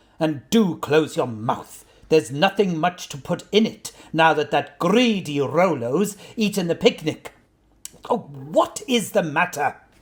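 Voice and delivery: sharp snap. Reading a story aloud, a character speaks to his companion, snapping.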